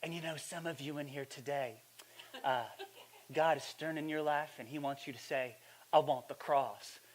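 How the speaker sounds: hushed preacher stage whisper. Retelling a trendy pastor speaking to a stadium crowd, in his half-whispering pastor voice. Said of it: "he gets into his whispering pastor voice".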